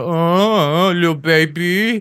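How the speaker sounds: play-acted, very slow, high taunt, "Uh" drawn out. Retelling a taxi driver taunting a woman: imitating a taunt. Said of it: "giving it".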